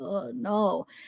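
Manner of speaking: soft, put-on sad and disgusted tone. Imitating a woman answering a question while thinking of something: imitating someone sounding sad and disgusted. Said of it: "disgusted thinking about it".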